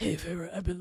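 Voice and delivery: put-on rough, raspy, gravelly, cigarette-scratched young man's voice. Like a tough, rough-voiced guy greeting a girl he knows, trying out the gravelly tone a character might have. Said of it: "I want it like the deep".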